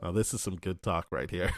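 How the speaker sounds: plain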